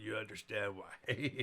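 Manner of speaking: ordinary delivery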